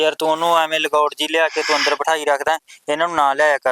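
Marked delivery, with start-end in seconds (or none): none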